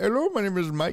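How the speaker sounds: heavy, high-pitched, put-on thick Indian accent. Imitating a scam caller from overseas: imitating a thick indian accent. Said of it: "that real thick Indian accent".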